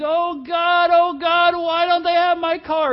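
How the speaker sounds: mock very slow high wailing scream, long stretched "why". Pastor retelling what a woman screamed at the rental car store, retelling a woman's scream. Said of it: "she screamed".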